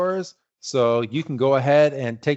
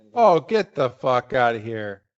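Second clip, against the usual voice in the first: angry, pissed-off exclamation. Reacting suddenly on air while the other speaker talks: angry outburst. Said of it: "I'm so pissed off right now".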